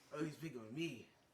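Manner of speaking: put-on slightly drunk, tipsy delivery. Voicing a bar patron who gives a traveler his name: acting a little tipsy. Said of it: "Sorry, I'm a little tipsy".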